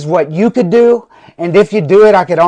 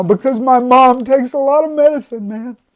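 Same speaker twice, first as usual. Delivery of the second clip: tearful speech through crying, pitched up; 6 semitones higher than usual. Speaking about the mother's medicine, crying while talking. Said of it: "And why am I crying right now?".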